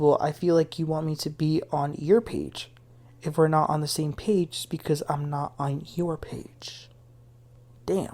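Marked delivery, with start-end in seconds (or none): none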